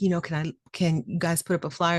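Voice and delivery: ordinary delivery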